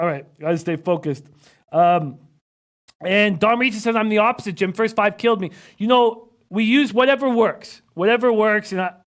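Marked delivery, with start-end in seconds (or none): none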